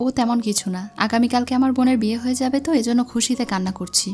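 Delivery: plain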